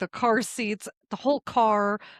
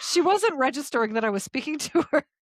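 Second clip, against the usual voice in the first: giggly, words broken by laughter; 4 semitones higher than usual. Telling a story about a dinner, laughing while talking. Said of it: "I have to stop laughing to tell the story".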